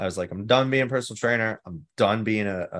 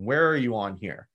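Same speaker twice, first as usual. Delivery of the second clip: stern, slow, measured tone. Retelling what he asked while sliding a paper across: imitating a stern question. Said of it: "He was very stern".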